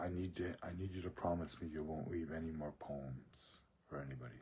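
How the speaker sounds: hushed, halting stage whisper, stumbling at the start. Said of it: "He's still whispering".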